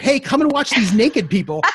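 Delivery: acted-out loud, high-pitched yelling. Recalling flipping through TV channels, the speaker reenacts yelling to their sister. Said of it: "now I'm yelling to my sister".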